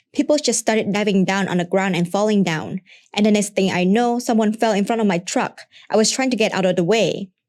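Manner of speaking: ordinary talk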